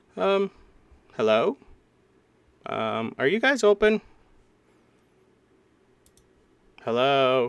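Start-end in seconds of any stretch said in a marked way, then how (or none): 1.2-7.5 loud, slow calling-out voice. Voicing a visitor stepping into a foggy shop: calling out into a shop. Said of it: "you hear a voice call out".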